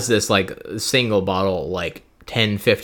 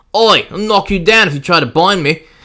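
shrill, loud, high shout in bad Cockney accent; 10 semitones higher, 8 dB louder than usual. Playing Corrin, answering the order to keep him out of battle; Corrin voice, Cockney-ish. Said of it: "That's my Corrin voice".

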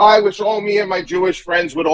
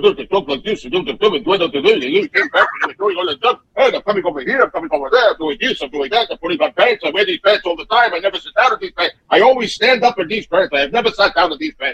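bickering comic rant. Retelling a comedian's stage act, imitating Jackie Mason's bickering. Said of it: "when he put on all that extra bickering".

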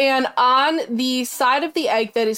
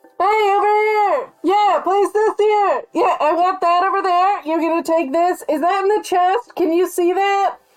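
muffled, pitched-up voice, as if through a door; 7 semitones higher, 3 dB louder than usual. Making the noises imagined inside the brain, slightly muffled through a door. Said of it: "it was supposed to be slightly muffled through a door".

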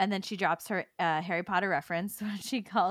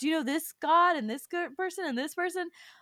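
very high, mock eager, rapidly rattled off; 10 semitones higher than usual. Retelling him naming people to his mom, retelling excited rattling off. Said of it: "he's like all excited yeah".

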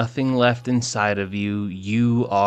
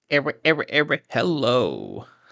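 swooping on-air radio DJ announcer voice; 4 semitones higher than usual. Opening a recording, trying out a dj voice. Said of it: "Working on my D J voice".

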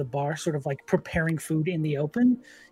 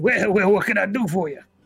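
loud, big lizard creature voice; 4 semitones higher, 5 dB louder than usual. Voicing a large lizard cook greeting customers: large lizard man cook. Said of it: "this large lizard sort of turns to look at you and says".

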